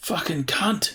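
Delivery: high, Australian-style yell.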